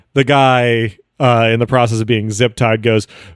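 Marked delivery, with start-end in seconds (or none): none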